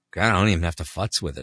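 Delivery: plain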